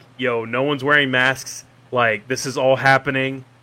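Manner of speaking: ordinary delivery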